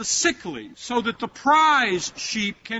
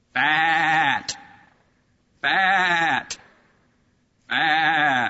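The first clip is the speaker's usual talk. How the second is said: low, drawn-out sheep bleat on fat; 5 semitones lower than usual. Speaker describing self-satisfied people as fat sheep, then doing a sheep impression. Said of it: "do an impression of a sheep".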